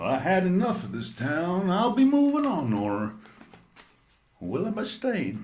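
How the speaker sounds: put-on old cowboy accent, swooping pitch. Hosts answering a listener's question, riffing in an old cowboy voice. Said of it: "You sound like an old cowboy".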